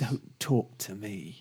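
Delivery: hissing deep cat voice. Imagining how a cat would talk, speaking as the cat in a hissy deep cat voice. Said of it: "some kind of hissy kind of deep".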